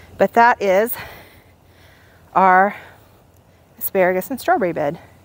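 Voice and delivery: short of breath, winded. Showing the garden bed after leaning over and stretching, out of breath. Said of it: "I am out of breath".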